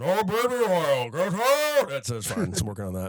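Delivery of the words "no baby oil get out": muffled giant voice, like mouth full of cotton. Showing wrestler impersonations: Andre the Giant impression. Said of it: "sounds like somebody swallowing cotton balls".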